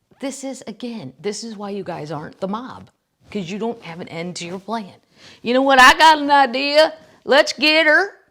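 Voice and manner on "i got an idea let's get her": booming, very loud, very high Southern drawl. Acting out Michigan guys coming up with a plan, the speaker gives them a Southern accent. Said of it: "I'm giving them Southern accents".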